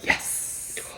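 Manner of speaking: soft, whispered "yes". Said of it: "that you were like".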